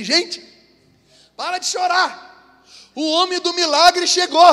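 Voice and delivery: relieved crowd voice, high, slow and hopeful.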